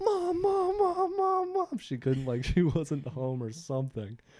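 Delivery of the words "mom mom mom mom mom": high, loud, panicked scream. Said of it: "And I'm screaming".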